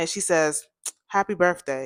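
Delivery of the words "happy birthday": put-on irritated voice with attitude. Retelling how a friend frowned and greeted her: imitating a friend saying it with attitude. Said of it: "with this frown on her face and with this attitude".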